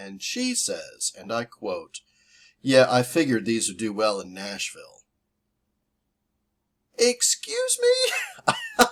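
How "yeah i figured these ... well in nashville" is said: put-on snarky tone, louder. Retelling what the woman at the merch counter said: imitating a snarky remark. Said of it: "was a little snarky with me".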